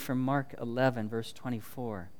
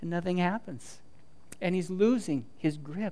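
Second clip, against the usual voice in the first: ordinary talk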